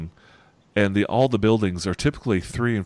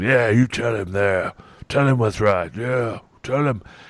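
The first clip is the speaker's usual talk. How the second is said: chuckling, laughing encouragement, slower. A game master voices an onlooker cheering on a kicking, chuckling and egging on. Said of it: "The other one's kind of chuckling".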